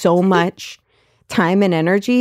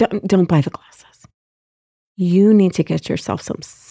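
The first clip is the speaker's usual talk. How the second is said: put-on whisper. Retelling what a woman in the glasses store whispered: imitating someone whispering. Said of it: "she starts, like, whispering to me".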